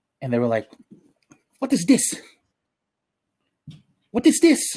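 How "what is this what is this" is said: put-on heavy, thick Filipino accent, very high-pitched. Quoting the person who was cleaning his backpack, in a thick Filipino accent. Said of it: "With a thick Filipino accent".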